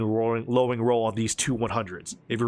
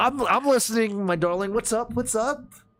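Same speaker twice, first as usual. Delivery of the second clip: very high, slightly tipsy, sozzled dad voice; 10 semitones higher than usual. Voicing a father answering his daughter over the radio: tipsy father voice. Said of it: "He's a little bit there".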